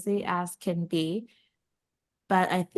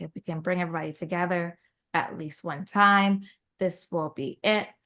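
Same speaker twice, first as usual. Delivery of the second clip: ordinary talk, nothing marked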